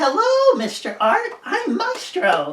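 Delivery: very high, very loud cartoon penguin voice. Describing recorded characters for a video, the speaker does the penguin character voice. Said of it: "the penguin talks like this".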